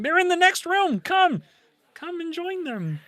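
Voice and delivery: very high, squeaky frog-puppet lich voice, menacing. Voicing the lich while describing it in a game: Kermit the Lich voice. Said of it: "Kermit the Lich is terrifying".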